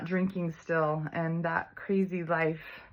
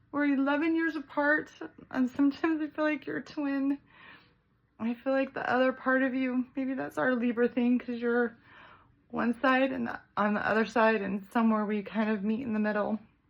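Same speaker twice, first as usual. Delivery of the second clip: weeping, tearful, pitched-up crying speech; 7 semitones higher than usual. Speaking to their best friend, crying while speaking. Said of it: "I'm crying because you truly are my best friend".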